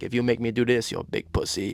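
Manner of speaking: put-on French accent. Retelling what his buddy said to him, in the buddy's French accent. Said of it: "in his French accent".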